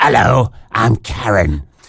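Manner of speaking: rasping, gravelly voice like a heavy smoker. Presenting today's anagram clue, speaking as the character: Raspy Karen voice. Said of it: "talks like this".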